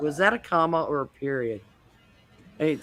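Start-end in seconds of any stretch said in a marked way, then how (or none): none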